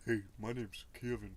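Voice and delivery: put-on deep, low voice. Imagining how someone with that name would sound: deep voice. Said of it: "I think of him having a deep voice".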